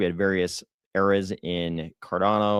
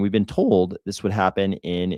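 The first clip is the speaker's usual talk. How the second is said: voice breaking briefly. Explaining when a Cardano network upgrade is supposed to happen, voice cracking. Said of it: "my voice just cracked there".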